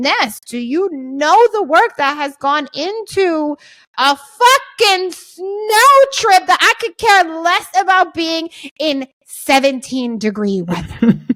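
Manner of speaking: slow, dragged-out, exasperated, fed-up rant rising high.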